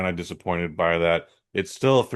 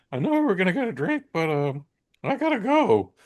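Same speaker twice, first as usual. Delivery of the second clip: put-on nervous voice, very high-pitched and swooping; 11 semitones higher than usual. Retelling a friend's words after the cinema outburst: imitating a nervous friend. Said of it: "my man here got nervous".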